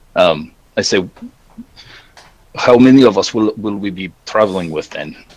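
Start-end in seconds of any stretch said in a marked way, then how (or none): 2.5-5.1 put-on, loosely Slavic accent. Speaking in character to Dorinda, asking about travel companions: Slavic accent. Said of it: "a kind of a Slavic accent".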